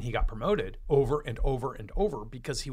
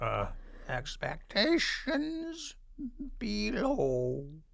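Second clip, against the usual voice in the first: very high creature voice, lower part drawn out; 9 semitones higher, 4 dB quieter than usual. Asked by the co-host to redo the advice in the other voice, Yoda voice attempt. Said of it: "That sounds more like a Western Yoda".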